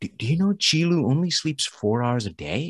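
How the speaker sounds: whispered voice. Retelling what somebody in a meeting said into his ear: imitating someone whispering. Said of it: "they kinda whispered in my ear".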